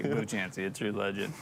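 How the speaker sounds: ordinary delivery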